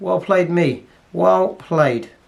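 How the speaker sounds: wry, dry sarcastic tone. Praising himself after missing the cannon: sarcastic. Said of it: "Sarcasm is, uh, creeping in".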